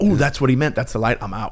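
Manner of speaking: ordinary talk, nothing marked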